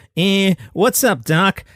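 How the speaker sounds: bad, very slow, drawn-out cartoon rabbit voice. Offering to show what it sounds like, the speaker does a Bugs Bunny impression. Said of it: "It's like me doing Bugs Bunny".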